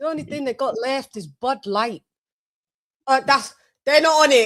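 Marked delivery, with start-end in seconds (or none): 0.0-2.0 gruff Scottish man's voice. Retelling what a man in a bar said: scottish accent. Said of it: "the Scottish guy came in and he went".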